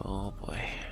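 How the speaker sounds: hushed, soft, unvoiced sneaking whisper.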